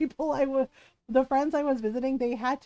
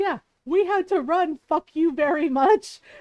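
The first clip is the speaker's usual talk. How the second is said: put-on angry voice, higher and louder; 3 semitones higher, 5 dB louder than usual. Retelling a furious passenger's complaint to the flight attendant. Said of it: "he was so not having it".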